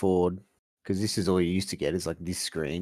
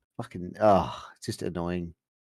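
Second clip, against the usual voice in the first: ordinary delivery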